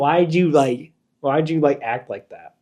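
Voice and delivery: normal talking voice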